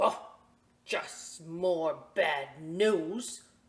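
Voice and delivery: grumpy, cross, loud, very slow, drawn out. Reading a picture book aloud, an older gentleman getting his newspaper: grumpy and mad. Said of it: "he's all mad".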